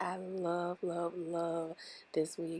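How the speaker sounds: slow, happy, beaming voice with audible smile. Showing off a new wig to viewers; smiling while talking. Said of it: "You can probably hear it in my voice, like I'm literally smiling".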